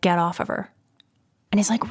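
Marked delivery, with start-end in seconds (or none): 0.0-0.7 low, gruff, fatherly, commanding tone. Retelling a father ordering his son off her, imitating a gruff command. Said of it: "gruffly say".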